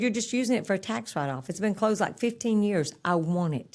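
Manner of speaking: plain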